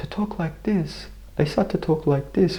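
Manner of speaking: put-on caring voice, high.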